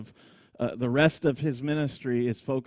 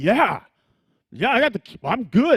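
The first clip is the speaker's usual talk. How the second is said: put-on self-satisfied voice, higher and louder; 10 semitones higher, 9 dB louder than usual. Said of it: "Peter's like".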